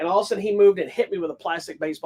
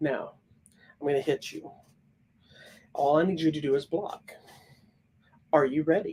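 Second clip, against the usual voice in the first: soft, gentle, even, matter-of-fact calm; 3 semitones lower, 4 dB quieter than usual. Retelling how the instructor spoke before a belt-test hit: imitating a soft-spoken matter-of-fact voice. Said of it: "He talked to you like this, very matter-of-factly, very soft-spoken".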